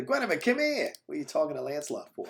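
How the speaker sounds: fast, rattled-off, clumsy, bad Boston accent. Imagining Bill Burr as King Arthur, the speaker does a bad Bill Burr Boston accent. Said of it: "terrible attempt at Boston accents".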